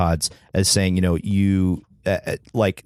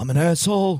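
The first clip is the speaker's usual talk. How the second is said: very high, pitched-up stand-up comedian voice; 11 semitones higher than usual. Doing a quick Denis Leary impression for the others. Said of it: "he could also do some Dennis Leary".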